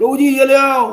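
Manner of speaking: loud, high, drawn-out calling voice. Showing how not to speak while distributing: spoken loudly. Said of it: "जैसे जोर से बोल दिया".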